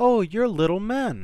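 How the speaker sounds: very high, joyful, happy exclamation. A startled princess sees the dwarves peeking at her over the footboards; crying out happily. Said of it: "she cried happily".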